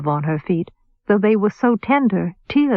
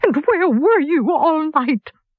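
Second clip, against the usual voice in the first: high, angry voice breaking with sobs; 8 semitones higher than usual. Narrator reads Dunca's demand, sobbingly angry voice. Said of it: "in a sobbingly angry voice".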